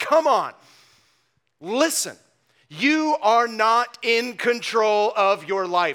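put-on fiery, sarcastic rebuking tone. Quoting an apostle rebuking people who presume on their plans: imitating a fiery sarcastic rebuke. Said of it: "with a bit of fire and, might I suggest, sarcasm".

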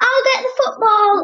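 shouted, very high pitch. Calling out to a companion while wandering through a gloomy forest, shouted. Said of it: "I shouted to Benjamin".

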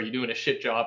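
ordinary talk

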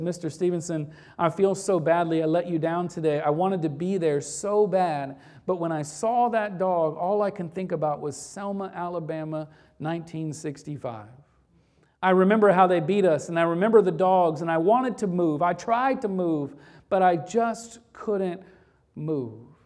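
usual speaking voice

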